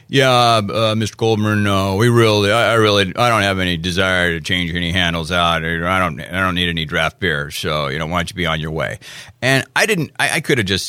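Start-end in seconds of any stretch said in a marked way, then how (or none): 0.1-9.0 low, grumpy grumbling. Retelling a customer's brush-off after an hour's wait: imitating a grumpy customer. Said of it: "he's kind of a grumpy guy".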